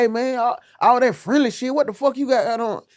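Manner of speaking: high, jealous, possessive, prying tone. Acting out a jealous boyfriend complaining: imitating a jealous boyfriend. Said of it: "he'll be like".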